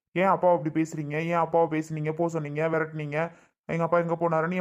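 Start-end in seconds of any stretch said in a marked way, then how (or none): none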